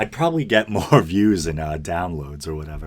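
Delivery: chuckling, self-mocking, laughing through the words. Joking about calling the podcast an annex, laughing while talking. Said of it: "laughing at my, uh, my own situation".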